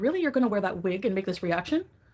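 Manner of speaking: ordinary talk, nothing marked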